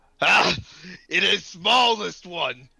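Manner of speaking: loud, high, shouted taunting yell. In a role-play game, the narrator voices one of a group taunting the party: shouting back. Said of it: "one of them shouts back".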